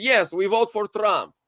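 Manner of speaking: put-on very thick, heavy foreign accent on English. Retelling a man's answer to a DMV clerk: imitating a very thick accent. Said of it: "with a very thick accent and goes".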